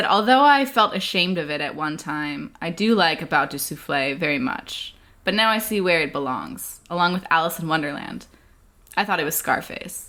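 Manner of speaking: ordinary delivery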